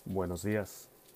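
hushed voice dropped as low as possible. Restarting the podcast intro to add gravity: voice dropped as low as possible. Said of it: "I drop the my tone to as low as I can make it".

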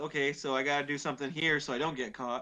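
ordinary talk, nothing marked

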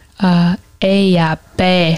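very slow, every syllable stretched and drawn out. Speaker retells how they said words when first learning a language: drawing the word out. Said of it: "really drawing them out".

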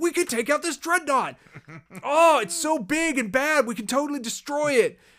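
very high-pitched shouting over a radio link. Retelling a scene, the speaker acts out Poe over the com: imitating Poe yelling. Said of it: "he's just yelling over the com like".

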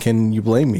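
ordinary talk

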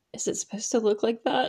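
whispered in a hushed, secretive way. Recapping a TV scene, the speaker acts out a character's line, retelling a whisper. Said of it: "Whispers to Roberta".

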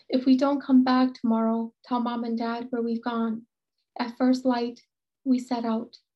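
ordinary delivery

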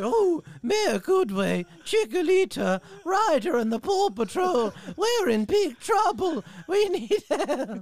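high, loud, swooping cartoon voice, every word stretched. Doing a string of cartoon impressions, the speaker does a Mayor Goodway voice.

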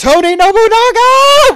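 shrill, piercing, high, loud scream. Describing a fight, the speaker acts out someone screaming, retelling a scream. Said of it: "just screaming".

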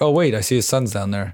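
usual speaking voice

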